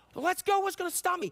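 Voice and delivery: play-acted very high, eager, excited burst. Retelling a man's eagerness to be baptized, imitating his excited eagerness. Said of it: "You can hear how excited this man was".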